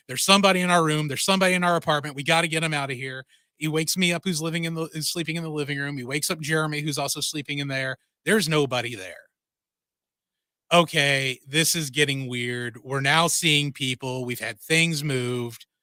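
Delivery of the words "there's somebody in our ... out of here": plain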